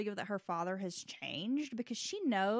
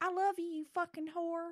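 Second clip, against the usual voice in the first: high-pitched yell, hollered at the top of the lungs; 8 semitones higher than usual. Describing neighbors who fight, the speaker acts out the man being taken away: imitating a man yelling. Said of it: "the guy will yell".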